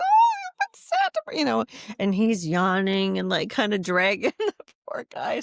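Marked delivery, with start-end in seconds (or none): 0.0-1.4 shrill, very high, louder excited voice. Retelling her videos of the excited girls meeting Santa: high voice. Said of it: "I've got my high voice on of like".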